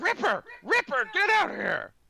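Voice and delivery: squealing, shrill, very loud goblin voice yelling. Voicing a goblin calling off its wolf: goblin yelling at a wolf. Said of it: "he's like".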